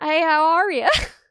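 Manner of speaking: American southern accent. Showing how their southern accent sounds talking to their father, put-on southern accent. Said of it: "is my southern accent when I'm imitating you".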